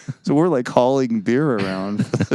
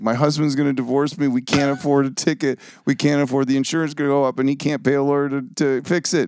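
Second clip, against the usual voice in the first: mock weepy, tearful crying voice, pleading; 4 semitones higher than usual. Retelling how his wife, pulled over by a police officer, pleaded: imitating someone crying. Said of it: "She's crying".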